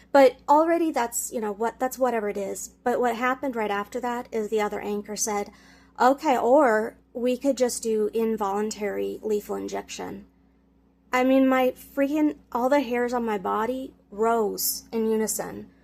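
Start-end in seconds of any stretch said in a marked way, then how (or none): none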